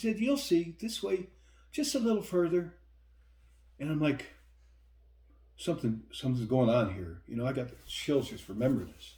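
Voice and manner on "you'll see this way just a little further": put-on giggly, pitched-up young woman's voice. Retelling what a woman said to him, young woman's voice. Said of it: "I'm trying to do a young woman's voice".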